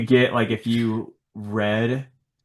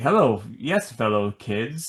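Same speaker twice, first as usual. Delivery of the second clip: slow, drawn-out film-character delivery. Describing how a comic character is written: Steve Buscemi impression. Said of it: "written like Steve Buscemi in".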